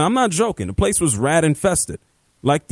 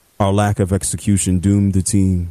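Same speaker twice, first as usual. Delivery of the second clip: put-on monotone voice, pitched lower; 8 semitones lower than usual. Quote what a player said after the game, as a monotone Trevor Lawrence imitation. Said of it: "in the most monotone way possible".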